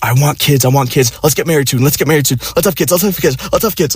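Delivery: nonstop run-on babble, words tumbling out very fast. Retelling what a woman kept saying to him around her birthday; imitating rapid speech. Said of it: "Like really fucking fast speech".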